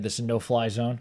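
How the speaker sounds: ordinary talk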